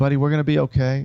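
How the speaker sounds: put-on fearful, scared-sounding voice. Retelling a man trapped by fire talking to his dog: imitating a fearful voice. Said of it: "You can hear the fear in his voice".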